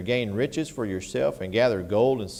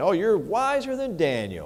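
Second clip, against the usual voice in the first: sarcastic, mocking, swooping high voice; 7 semitones higher than usual. Quoting what was said about Daniel during a Bible teaching, mock-sarcastic. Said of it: "He's being sarcastic".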